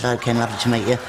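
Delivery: ordinary talk, nothing marked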